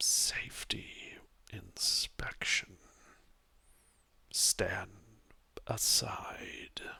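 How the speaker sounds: very slow, hushed, almost-whispered delivery. Game master voicing the figure who knocked on the door, almost a whisper. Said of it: "you hear this almost whisper come from the one".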